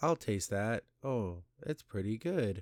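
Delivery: very soft, soft-spoken and hushed voice. Mocking a movie scene, imitating Ben Grimm's very soft voice. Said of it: "talking in a very soft voice".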